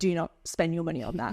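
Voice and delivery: ordinary talk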